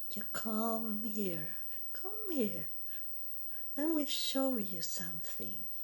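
kindly, coaxing, very mild and gentle. Describing how he talks when you do what he wants, imitating a very mild voice. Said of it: "he is very mild in his voice".

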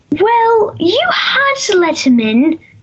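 British accent, pitched a bit high. Asked by the host to say a Cogsworth line, Cogsworth British accent. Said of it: "Say a line from Cogsworth with your best British accent".

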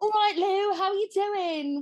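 put-on loud English-accented voice. Retelling his first day, a friend greets him at the door: imitating Fudge's English accent. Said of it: "everybody had these English accents".

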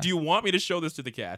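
patronising, belittling, condescending talking-down tone. Imitating how a man talks down to someone, mock-condescending. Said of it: "It's so condescending".

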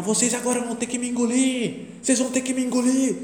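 worked-up, very high, shrill shriek. Retelling a coach's outburst at a reporter's interview after winning a championship, imitating Zagallo shouting. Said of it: "ele começou a gritar".

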